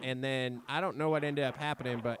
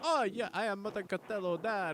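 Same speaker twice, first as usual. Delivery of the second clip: slow, high-pitched put-on Latin American accent; 6 semitones higher than usual. Retelling meeting a team member's dad at practice: imitating the dad's accent. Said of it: "he's got the accent".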